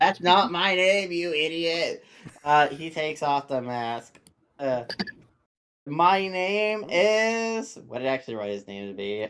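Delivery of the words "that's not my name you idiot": put-on slurred drunk voice, higher. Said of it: "that's some very slurred speech right there".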